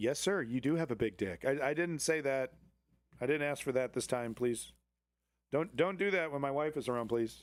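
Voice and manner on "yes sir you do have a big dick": put-on robot voice. Acting out a chatbot's reply to a request: put-on robot voice. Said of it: "And it goes".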